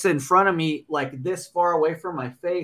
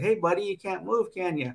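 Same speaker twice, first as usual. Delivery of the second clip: imitated mock-friendly smiling teasing tone, quieter; 4 semitones higher, 4 dB quieter than usual. Retelling how a smiling man taunted you, imitating a smiling taunt. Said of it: "and he's smiling at me".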